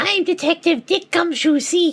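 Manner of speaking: catgirl character voice. Playing Detective Dick Gumshoe in a courtroom scene, Gumshoe in a catgirl voice. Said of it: "use the Catgirl voice for Gumshoe".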